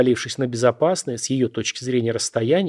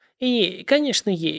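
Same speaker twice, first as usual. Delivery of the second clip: trembling, shaky voice, higher pitch; 7 semitones higher than usual. The unhappy woman answers the narrator's question, trembling voice. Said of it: "дрожащим голосом".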